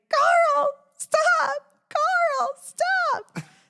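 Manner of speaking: play-acted very high, long-stretched, drawn-out screams. Retelling a scene where her dog held a bunny: imitating her own screaming. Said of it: "So I'm just outside screaming".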